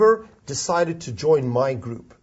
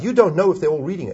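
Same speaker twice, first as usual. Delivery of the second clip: ordinary talk, nothing marked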